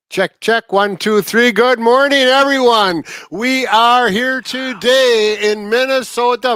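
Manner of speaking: thick Minnesotan accent. Opening the show right after a mic check: very Minnesotan accent. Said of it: "saying Minnesota with a very Minnesotan accent".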